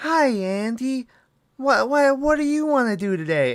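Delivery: very high toy-doll voice, one word drawn out. Complaining about a movie's voice acting, doing a soft Mark Hamill voice. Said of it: "It's kind of just like a soft like".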